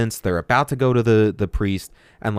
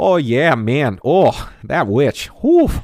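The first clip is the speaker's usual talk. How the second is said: put-on very slow, swooping, drawn-out, overdone Canadian accent; 4 semitones higher, 5 dB louder than usual. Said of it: "Steve's over exaggerating".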